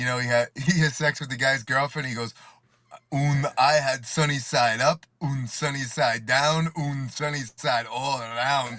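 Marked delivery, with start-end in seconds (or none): 3.1-8.8 hammy, slow, put-on German accent. Quoting an actor's line from a movie he saw, in a fake German accent. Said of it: "fake German accent".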